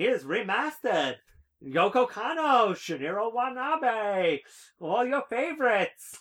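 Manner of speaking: very high, loud carnival barker voice. Imagining how to sell a remastered release to U.S. fans, in a carnival voice. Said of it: "that carnival voice that you just used".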